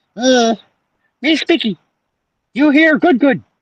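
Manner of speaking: very high-pitched, squeaky delivery. A creature in the story speaks to Miss Spicky, in a high-pitched Mickey Mouse voice. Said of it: "the creature said in a high pitched Mickey Mouse voice".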